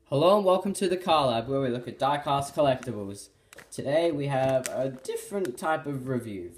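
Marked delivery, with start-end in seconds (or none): 3.7-6.5 voice cracking and breaking mid-sentence. The host opening a diecast collectibles review, voice cracking. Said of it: "Voice crack, sorry".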